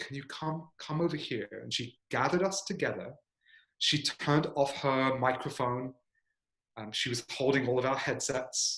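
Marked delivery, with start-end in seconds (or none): 0.0-1.5 secretive, soft, hushed half-whisper. Retelling how she quietly called the group over: imitating a half-whisper. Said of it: "in a whispered voice said".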